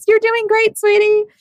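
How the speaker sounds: very high-pitched, gushing, proud, doting mom voice. Telling a friend how she watched proudly, imitating a proud mom. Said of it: "proud momming".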